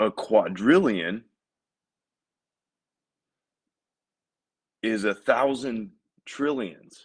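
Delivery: slow, deliberate, every word weighted and drawn out. Speaker explaining huge numbers to listeners, slow for emphasis. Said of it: "I'm kind of like saying this slow for emphasis".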